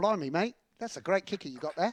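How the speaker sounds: fake Cockney accent drifting Australian. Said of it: "I thought it started London, but then it, it went off all over".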